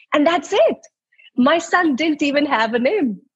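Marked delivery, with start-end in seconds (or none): none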